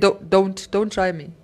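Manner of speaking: imitated deep bass voice. Retelling a warning to misbehaving kids: imitating own bass warning voice. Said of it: "I just learned to put a bass in my voice".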